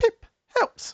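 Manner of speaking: very high, chiming, bell-like little voice. Narrator voicing a small fox-like hologram creature after it sniffs the rations, bell-like voice. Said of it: "in a bell-like voice goes".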